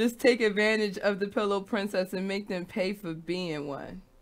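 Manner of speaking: ordinary talk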